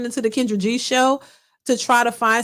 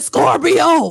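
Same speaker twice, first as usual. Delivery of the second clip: sudden, screamed-out single word; 4 semitones higher, 6 dB louder than usual. Imitating how a caller said her zodiac sign: imitating a scream. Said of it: "She sound like she said".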